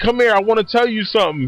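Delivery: sexy, seductive, alluring come-hither voice. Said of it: "she says it in a sexy voice".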